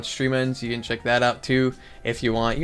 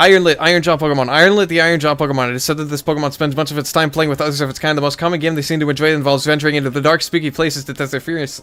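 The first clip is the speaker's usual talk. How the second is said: very fast speed reading, rattled off; 3 semitones higher, 4 dB louder than usual. On stream, the speaker reads a pokemon description aloud: speed reading very fast. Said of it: "I'm gonna read this as fast as possible".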